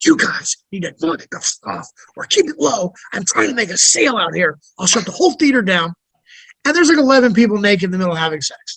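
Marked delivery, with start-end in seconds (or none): 0.0-5.9 low, hushed, under-the-breath whisper. Retelling telling people in the theater to keep it down: retelling a whisper. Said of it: "a whisper was like".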